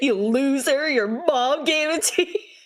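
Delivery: mock taunting, jeering, high-pitched teasing tone. Retelling how a friend teased about a name: imitating a friend mocking. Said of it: "would always make fun of me".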